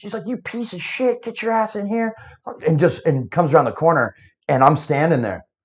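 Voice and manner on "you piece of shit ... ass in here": put-on yelling, pitched higher. Retelling how a friend's mom yelled at him in the driveway: imitating a mom yelling. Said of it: "I could hear his mom start yelling at him".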